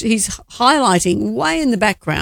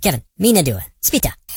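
put-on cartoon voice speaking gibberish; 4 semitones lower than usual. Asked about the Minions, one speaker answers the way they talk: Minion voice. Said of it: "The little Minions that talk like this".

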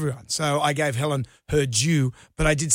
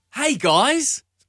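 very high, lifted, thrown way up in pitch; 10 semitones higher than usual. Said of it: "his Robert Irwin impression".

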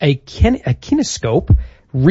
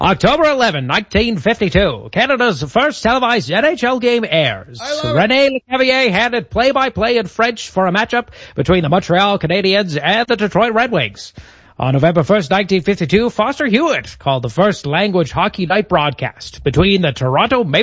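put-on old-timey vintage radio announcer voice; 5 semitones higher than usual. Podcast host reads the next segment for the co-host, in an old-timey radio announcer voice. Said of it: "do you want me to do the next bit in the old-timey radio voice?".

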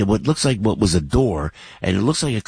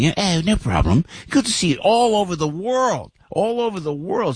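heavy, thick put-on English accent, pitched up; 9 semitones higher than usual. Retelling a man's reply while taking pictures in Italy, thick English accent. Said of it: "with a real thick English accent".

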